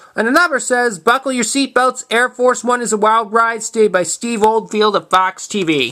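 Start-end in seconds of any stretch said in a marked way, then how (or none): none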